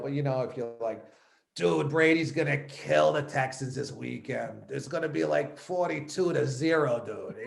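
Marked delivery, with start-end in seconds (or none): 1.5-7.4 bad, amateur, put-on Boston accent. Answering a host's question, demonstrating a bad Boston accent. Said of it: "I've tried a bad Boston accent".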